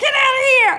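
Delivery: loud, shrill shout, pitched very high. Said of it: "My husband can be loud sometimes".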